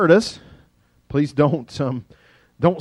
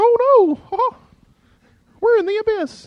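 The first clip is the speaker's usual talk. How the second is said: very high, squeaky put-on cartoon demon voice; 4 dB louder than usual. Voicing a demon in a story, Mickey Mouse-like demon voice. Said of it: "the demons sound like Mickey Mouse".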